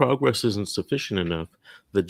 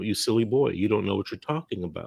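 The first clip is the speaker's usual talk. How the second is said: put-on chuckling. Retelling how an attorney answered with a chuckle: imitating a chuckling reply. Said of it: "he kinda chuckled at me like".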